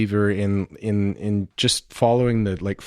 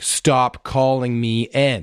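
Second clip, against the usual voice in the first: put-on yelling, drawn out and fed up; 3 semitones higher than usual. Retelling a security guard's reply to a student: imitating someone yelling. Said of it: "yelled back at him".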